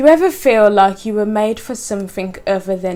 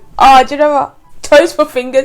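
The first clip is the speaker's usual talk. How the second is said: excited, loud, high-pitched shouting; 5 semitones higher, 8 dB louder than usual. Answering a quiz question into the mic, shouting. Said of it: "And I'm shouting, I'm really sorry".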